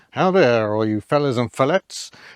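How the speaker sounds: badly done, awful put-on rural American accent. Imitating how a YouTuber would greet viewers: awful Vice Grip Garage accent. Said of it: "that's an awful accent, sorry, Derek".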